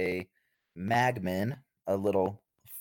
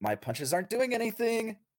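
small, frightened voice, pitched way up, rising; 12 semitones higher than usual. Playing a monk in a tabletop fight, the character speaks in a scared voice. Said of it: "A nice little scared voice".

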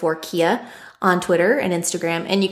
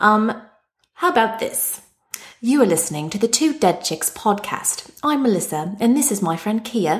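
deliberate attempted English accent. Asked by a friend to do it again, introduce the podcast in an english accent. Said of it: "An English accent".

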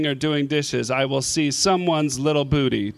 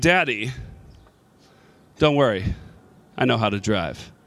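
solemn, very serious, self-assured, confident tone; 3 semitones lower than usual. Father retells his 8-year-old daughter reassuring him: imitating a very serious tone. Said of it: "in a very serious tone".

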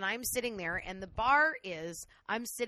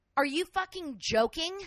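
really loud, blurted, confrontational outburst; 6 semitones higher, 4 dB louder than usual. Telling a story about confronting a man at a bar, retelling a loud outburst. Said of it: "And I say it really loud".

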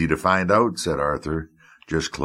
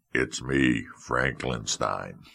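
very deep, spooky haunted-house voice; 5 semitones lower, 5 dB quieter than usual. Answering his startled father's question at the door, in a deep, spooky voice. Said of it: "In his deepest, spookiest voice".

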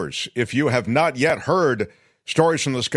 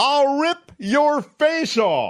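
mock shouting, very high pitched and very slow; 13 semitones higher than usual. Retelling what a music teacher told a student, retelling a yell. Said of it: "Why are you yelling?".

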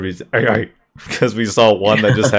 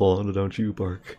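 put-on sing-song tone, quieter; 10 dB quieter than usual. Repeating the other speaker's line to the dog: imitating a sing-song line. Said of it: "It sounds like a song".

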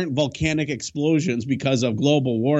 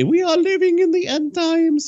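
put-on very high, cute Eastern European accent; 3 dB louder than usual. Quoting what her grandmother used to say, in grandmother's cute accent. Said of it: "she'd say with the cute accent".

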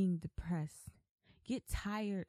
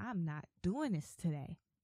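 mock angry, mad, firm delivery. Retelling her own words when she got mad: imitating own angry words. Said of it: "I got mad and I said".

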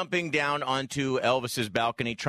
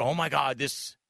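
plain

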